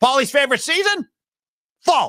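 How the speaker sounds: high, swooping sportscaster voice, rhythmic. Reading a listener's message aloud in the Chris Russo voice. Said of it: "in the Chris Russo voice".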